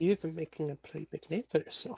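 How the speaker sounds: put-on subtle, faint, soft purring Irish accent. A player voices their character, in a soft, subtle Irish purring accent. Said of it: "very soft, very subtly Irish purring accent".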